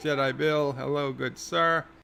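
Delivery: normal talking voice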